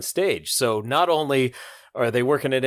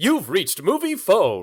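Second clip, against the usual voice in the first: jovial, sing-song voice swooping high; 7 semitones higher than usual. Recalling an episode, imitating Kramer answering the phone as movie phone: mock-jovial Kramer voice. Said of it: "with that jovial voice".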